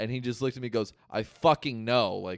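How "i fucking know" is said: play-acted angry, exasperated, really mad tone. Retelling a reply after a pool shot: imitating Josh sounding really mad. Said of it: "really mad".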